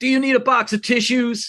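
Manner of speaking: put-on, very high-pitched yell. Retelling yelling back at a driver: retelling own yell. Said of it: "So I yelled back at him".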